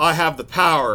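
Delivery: ordinary delivery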